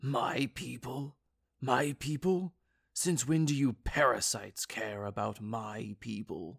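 furious, angry hissed words. Narrator reads the giant's retort, hissing. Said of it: "The giant hissed".

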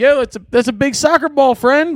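acted-out, high, screamed yell. Retelling how a friend screamed back across a field: imitating someone screaming. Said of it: "Jimmy screams back".

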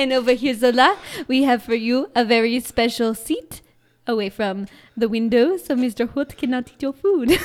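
very loud, terrible French accent. Acting out serving the dogs their dinner: shitty French accent. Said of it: "in a really shitty, shitty French accent".

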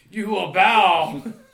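very loud, high, ranting scream. Acting out a fire-wielding figure confronting someone in an empty town, screaming like General Zod. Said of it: "just screaming at him like General Zod".

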